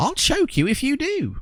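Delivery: snappy, very high, squeaky creature voice. A tiny creature answers a threat to eat it, snapping back. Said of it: "the creature whips back".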